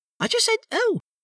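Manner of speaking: very high, anxious, unsure, nervous little voice. Asked 'what?', he explains he only said oh, nervously. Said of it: "said Piglet nervously".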